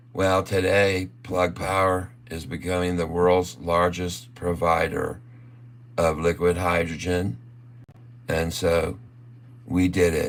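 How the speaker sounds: put-on, utterly unenthused, flat, monotone delivery. Imitating how Roland March would announce Plug Power news, imitating Roland March, unenthusiastic. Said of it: "he would say it like this".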